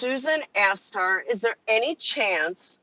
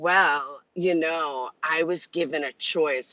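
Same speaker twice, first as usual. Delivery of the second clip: put-on condescending tone, "well" drawn out; 6 semitones lower than usual. Retelling another person's answer to a question: imitating condescending attitude.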